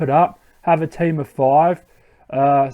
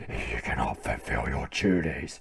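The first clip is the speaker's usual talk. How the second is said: dark, deep, low, menacing whisper; 14 dB quieter than usual. Voicing the main antagonist in a Pokemon scene, dark deep Ghetsis voice. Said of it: "really dark, deep voice".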